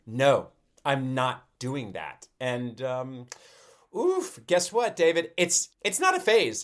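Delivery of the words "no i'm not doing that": mock-defiant tone, slower. A parent imitates a child refusing on the way to school; imitating a defiant refusal. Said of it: "there's a defiance in her voice that's like".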